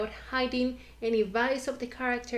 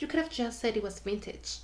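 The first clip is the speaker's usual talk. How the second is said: ordinary talk, nothing marked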